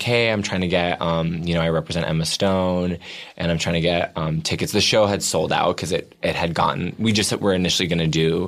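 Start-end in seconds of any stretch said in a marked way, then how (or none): none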